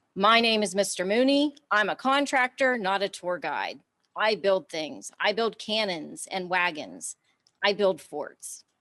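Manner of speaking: ordinary talk, nothing marked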